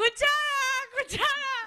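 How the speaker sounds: very high-pitched, loud, acted-out shouting. Telling a joke, voicing a fork calling after spoons: shouting as the fork. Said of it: "empieza a gritar".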